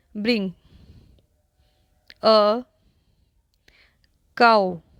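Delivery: each word of bring a cow separated by long pauses. Hindi lesson on linking english words, the odd way: long pauses between bring, a, cow. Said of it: "ये वाले words जैसे हम मैंने अभी बोला है".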